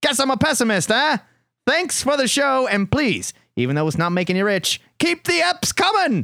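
fake Australian accent. Reading a listener's email aloud in a put-on Australian accent. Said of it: "that is my Australian accent".

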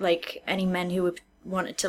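normal talking voice

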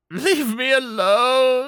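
very high, tearful, broken crying voice. Voicing a character who looks up at the players and starts to cry: crying. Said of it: "just starts to cry".

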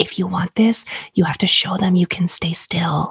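hushed, low-key whisper, close and quiet. Retelling a partner's words during labor: imitating husband whispering. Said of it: "whispering in my ear".

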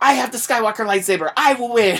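put-on high-pitched little kid shouting, a toddler's yell. Retelling a three-year-old running around with a toy: imitating a child yelling. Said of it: "running around with the Luke Skywalker minifig yelling".

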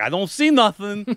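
slow, high, drawled put-on New York accent. Retelling a story, voicing a character reporting back that he sees nothing. New York accent. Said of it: "it was like a New York kind of thing".

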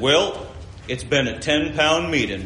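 put-on deep, thick Southern accent, preacher voice. Quoting a preacher on the last night of a gospel meeting, deep Southern accent. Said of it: "he was like deep southern accent".

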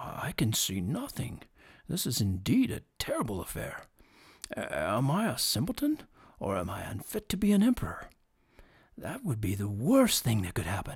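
low, muttered under the breath. Reading a fairy tale, the emperor speaks to himself before the empty looms: speaking to himself. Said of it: "said the emperor to himself after some little time had elapsed".

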